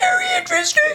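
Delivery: voice gone very high and squeaky. Reacting to a dream interpretation, with a squeaky voice. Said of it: "went squeaky like a balloon".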